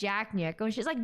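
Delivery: normal talking voice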